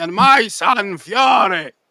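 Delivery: very slow, drawn-out cartoon pirate voice. Imitating an old man who sounds like a cartoon character: cartoon pirate voice. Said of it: "like a cartoon pirate".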